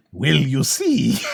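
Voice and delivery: goofy, silly cartoonish character voice. Retelling how another person read a line, Jar Jar voice. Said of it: "read it like Jar Jar".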